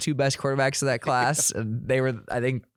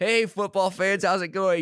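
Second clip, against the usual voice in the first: mock mournful, sad, high, near-tearful; 6 semitones higher than usual. Imitating a booed league commissioner greeting fans: sad Roger Goodell impression. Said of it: "the sadness in his eyes as he's like".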